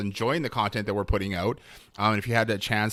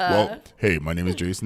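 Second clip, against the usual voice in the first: on-air radio DJ announcer voice; 3 semitones lower than usual. Host introducing themselves to everybody joining, in their best radio voice. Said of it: "my best it. radio voice that I can do".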